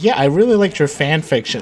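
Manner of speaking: ordinary talk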